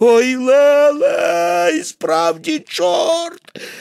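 very slow, high, drawn-out terrified wailing cry. Narrator voices the man who did not believe in devils, wailing cry. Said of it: "нема ніякої нечистої сили на світі. Це все вигадки темних силюків. / А в човні сидять два дядьки і стиха розмовляють".

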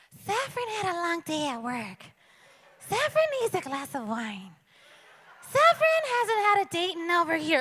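high, puppet-like voice. Speaker imagines talking about herself in the third person, talking like Elmo. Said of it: "if I talked in the third person like Elmo".

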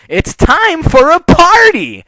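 shrill, very high, very slow, rising drawn-out yell. A pony pops back into view at her friend's side, yelling. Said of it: "contorting briefly with insanity in a completely blank".

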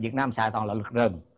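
ordinary talk

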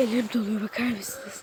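soft, low, hushed, non-breathy whisper.

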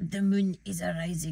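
put-on Scottish accent. Hosting a vampire-themed show filmed at night: Scottish accent. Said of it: "Why am I Scottish?".

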